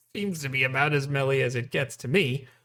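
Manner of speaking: plain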